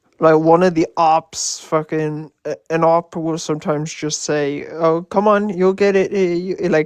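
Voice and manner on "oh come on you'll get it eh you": condescending, patronizing tone with fake reassurance. Retelling an op's remark during debates: imitating a condescending tone.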